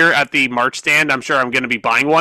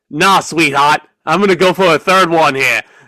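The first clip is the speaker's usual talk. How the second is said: clumsy, bad put-on Australian accent. Voicing Rhea Ripley going for a third Riptide, in a bad Australian accent as Rhea Ripley. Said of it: "that's a horrible Australian accent".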